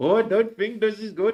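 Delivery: high, loud mock Indian English accent. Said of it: "Oh, the Indian accent. Do it once more".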